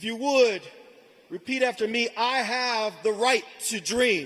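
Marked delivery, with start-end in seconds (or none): 2.2-4.3 full-voiced, commanding, authoritative big voice. Leading graduates in a line to repeat: big voice speaking with authority. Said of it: "but with big voices".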